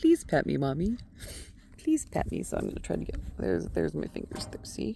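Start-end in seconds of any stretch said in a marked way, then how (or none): 0.0-2.4 sweet, pleading little begging voice. Speaking for a pet asking to be patted: voicing a pet animal. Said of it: "this little sweet nose is down here saying".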